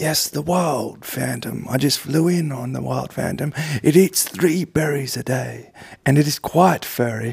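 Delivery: British wildlife documentary narrator delivery. In a comedy scene opposite a partner playing Jason Statham, use a David Attenborough voice. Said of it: "You're David Attenborough".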